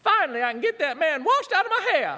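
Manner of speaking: put-on Texas accent.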